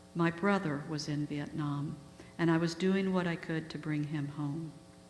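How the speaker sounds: usual speaking voice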